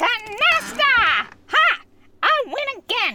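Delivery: very slow, loud, high, stretched-out shout. Announcing a win at canasta: loud shout. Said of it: "That was loud".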